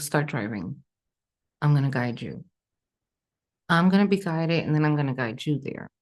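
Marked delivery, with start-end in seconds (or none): none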